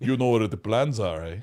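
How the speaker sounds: put-on German accent. Imitating the actor who played Darth Vader: imitating a German accent.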